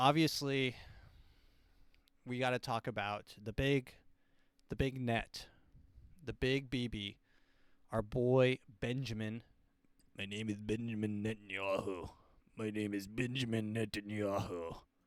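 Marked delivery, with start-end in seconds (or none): 10.2-14.8 deep, low, dropped, grave voice. Bringing up Benjamin Netanyahu in the news, do a Benjamin Netanyahu impression like a deeper-voiced Palpatine. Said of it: "talks a little bit like a deeper voiced Emperor Palpatine".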